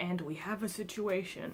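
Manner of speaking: grave, dead-serious, low-pitched voice. Retelling what dad said outside the room: imitating dad's very serious engineer voice. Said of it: "in his very serious engineer voice".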